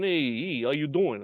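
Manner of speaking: put-on heavy New York–New Jersey accent. Retelling a man walking into the copier room to greet the speaker, deep heavy East Coast accent. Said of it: "heavy East Coast accent".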